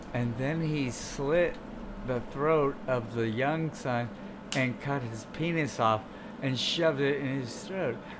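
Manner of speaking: very soft, quiet, flat, uninflected monotone. Imitating a man who never inflects his voice: imitating a flat, uninflected voice. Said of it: "He doesn't even inflect his voice at all".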